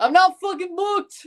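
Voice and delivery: horrible fake Scottish accent, very high and loud. Streamer quoting a meme line, in a horrible scottish accent. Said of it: "With a horrible Scottish accent".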